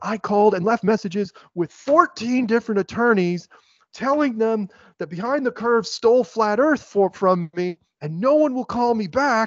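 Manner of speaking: impassioned, loud, high-pitched shouted rant. Retelling a video of someone yelling at the camera: imitating someone screaming. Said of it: "He was yelling at this".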